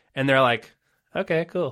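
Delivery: ordinary talk, nothing marked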